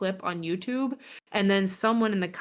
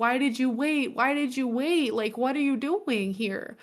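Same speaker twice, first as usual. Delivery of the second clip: mock tearful crying voice, higher pitch; 5 semitones higher than usual. Retelling a film scene where the sister opens the door: imitating someone crying. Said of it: "she starts crying. She's like".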